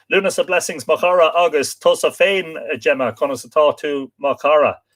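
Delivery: ordinary delivery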